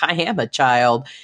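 usual speaking voice

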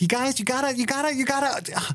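high-pitched, lecturing tone. Doing an impression of a lecturing actor: Jason Bateman impression. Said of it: "That's my Jason Bateman impersonation".

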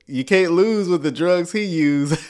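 ordinary delivery

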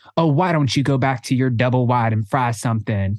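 ordinary talk

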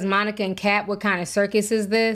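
ordinary talk

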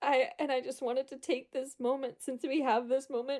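tearful, weepy, crying while talking. Retelling what he said while in tears: imitating someone in tears. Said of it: "And he's in tears".

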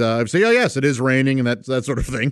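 ordinary talk

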